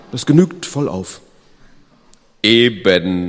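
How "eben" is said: very loud, ringing, resounding laughter. Narrator reading the Unumgängliche's reply to the Umgängliche: laughing loudly. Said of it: "lachte der Unumgängliche schallend".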